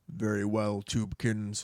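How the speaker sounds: deep disembodied voice. Retelling a scene where an unseen voice answers, in a deep disembodied voice. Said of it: "a deep, disembodied voice says".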